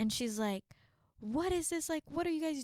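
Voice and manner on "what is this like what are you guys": put-on angry outburst, much higher. Recalling rules growing up, the speaker acts out a woman walking in, imitating her angry outburst. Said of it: "she's so mad".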